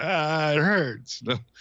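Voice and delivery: put-on crying. Retelling being stung by wasps as a child: imitating own past crying. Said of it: "crying, going".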